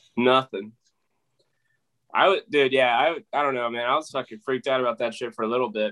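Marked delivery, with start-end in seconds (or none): 3.9-5.9 mumbling through the words. Telling another speaker about being scared after a shooting: mumbling. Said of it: "you mumbled through it".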